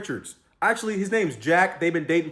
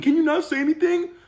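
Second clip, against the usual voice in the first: very high-pitched, desperate, pleading tone; 11 semitones higher, 3 dB louder than usual. Retelling how a woman asked not to be told on: imitating someone begging. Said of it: "She's begging me, begging me".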